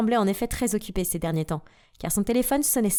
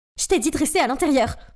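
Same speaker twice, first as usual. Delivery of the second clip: frantic, alarmed, loud panicked yelling; 4 semitones higher, 5 dB louder than usual. Reading a story aloud, the mother rushes out: panicked shouting. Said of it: "un regard affolé sur le visage en criant".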